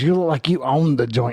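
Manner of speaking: put-on New Jersey accent. Retelling what a child said: imitating a son's New Jersey accent. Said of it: "with a New Jersey accent".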